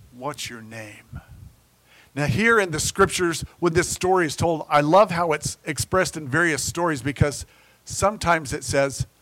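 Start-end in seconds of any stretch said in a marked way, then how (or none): 0.1-1.2 mock very soft, steady, calm, low, quiet voice. Retelling a scripture story's reply to a screaming man, in a calm tone. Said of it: "And in a calm tone".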